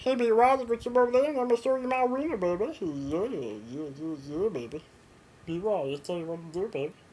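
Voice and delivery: familiar-sounding cartoon character voice. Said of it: "everyone can do that voice".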